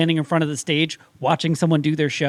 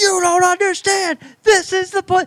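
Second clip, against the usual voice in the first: put-on very high-pitched, shrill, insistent yelling; 4 dB louder than usual. Retelling being yelled at during a stage show: imitating Stephen A. Smith yelling. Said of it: "He started yelling, like, at me".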